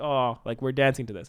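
ordinary delivery

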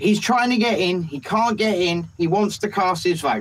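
ordinary delivery

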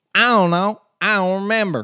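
Southern US drawl, very high and very loud. Quoting someone who said she doesn't remember: southern us accent.

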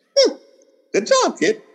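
put-on very high New York accent. Retelling what he said when the work was finished: New York way of saying things. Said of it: "the most New York way of saying things".

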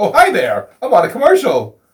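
startled, very high sing-song. Mocking a commercial's opening, imitating the producer who reads it: mock-surprised. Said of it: "Sounds like he's almost surprised".

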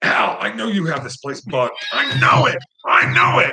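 loud, full-throated, high-pitched scream. Retelling a halftime scene at Cal, imitating Shula screaming. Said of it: "He's screaming at the light fixture".

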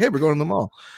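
matter-of-fact, offhand, no-big-deal casual delivery. Retelling a film character's line about the mall: imitating a casual remark. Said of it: "he says it in such a casual way".

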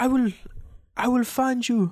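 put-on high-pitched Norse accent. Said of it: "the Norse accent's kind of hard for me to do".

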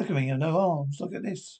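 ordinary delivery

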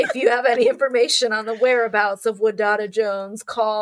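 creepy voice in the style of a tv host. Recalling the host of Unsolved Mysteries who terrified you, quote him in a creepy Robert Stack voice. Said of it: "with this real creepy voice".

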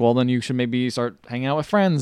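ordinary talk

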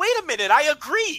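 shrill, very high shout. Retelling a mixed-up exchange to the other speaker: imitating own past yelling. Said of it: "Stop yelling at me".

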